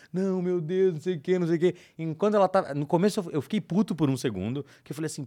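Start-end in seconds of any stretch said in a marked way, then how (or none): 0.1-1.7 put-on crying, mock tearful pleading. Retelling his mother calling him after losing money to a scam, imitating her crying. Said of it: "ela me liga chorando".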